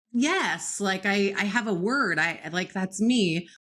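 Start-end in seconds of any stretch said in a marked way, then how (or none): none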